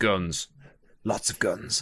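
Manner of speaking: slow, hushed whisper, each word weighed. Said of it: "I'm just whispering that".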